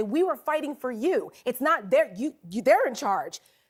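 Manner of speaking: ordinary talk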